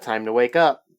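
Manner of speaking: ordinary talk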